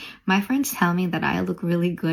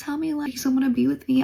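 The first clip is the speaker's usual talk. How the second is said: high, sobbing, tearful, begging voice; 8 semitones higher than usual.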